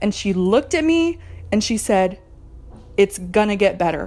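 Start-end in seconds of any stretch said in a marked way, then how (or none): 3.0-4.1 matter-of-fact, firm, assertive delivery. Retelling what the therapist said while the speaker cried, imitating a straightforward, assertive tone. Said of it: "in this very straightforward, assertive way".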